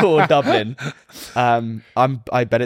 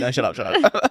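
normal talking voice

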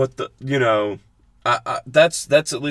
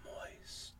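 soft, breathy whisper on moist. Describing somebody whispering a word for a clip: whispered "moist". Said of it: "Like somebody whispering".

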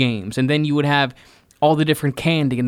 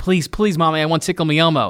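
mock crying child voice. Acting out a kid begging a parent in a store: imitating a crying kid. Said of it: "The kid's crying".

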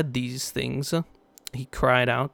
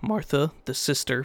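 voice breaking slightly, small crack. Reading the passage about Jesus at the tomb aloud: slight voice crack. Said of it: "little bit of voice crack".

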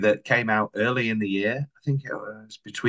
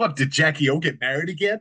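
terrible put-on American accent, pitched high; 5 semitones higher than usual. Imagining an american's reply to a question, terrible american impression. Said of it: "It's a terrible impression of an American".

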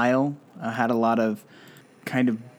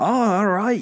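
put-on Irish or Scottish accent, pitched higher; 9 semitones higher, 4 dB louder than usual. Describing a game companion's voice, attempting his accent: Drippy's Irish-or-Scottish accent. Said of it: "It's supposed to be like Irish or Scottish".

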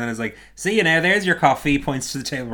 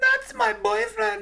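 voice pushed up very high. Retelling how a woman reacted on seeing her boyfriend, Vanessa's really high-pitched voice. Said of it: "Vanessa in a really high-pitched voice is like".

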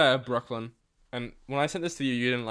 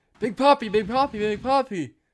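put-on very high, loud little kid yelling; 10 semitones higher, 5 dB louder than usual. Retelling yelling at a player at a game as a kid: imitating a kid yelling. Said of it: "so I kept yelling".

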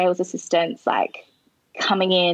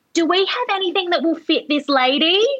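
acted, very high-pitched, loud yell; 10 semitones higher than usual. Retelling how a woman in the store yelled to the girl at the back, retelling a yell. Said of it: "she yells from one end of the store to the other".

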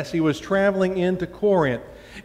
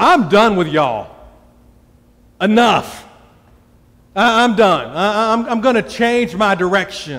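put-on raised voice with an Alabama accent; 5 dB louder than usual. Retelling what the Apostle Paul said, saying it the Alabama way. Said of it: "this is how we would say it in Alabama".

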